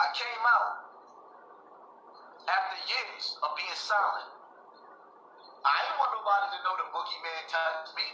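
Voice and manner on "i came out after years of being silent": very slow, deliberate delivery, every word weighed. Repeating an explanation to listeners about exposing someone, very slow. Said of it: "I'm going to say this slow again".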